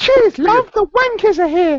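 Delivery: squeaky, very high, loud Mockney accent. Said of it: "I can do a very high pitched Mockney".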